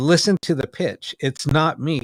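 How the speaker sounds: ordinary talk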